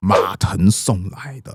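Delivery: low, slow, displeased tone. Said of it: "曹操就是那种不太爽的语气".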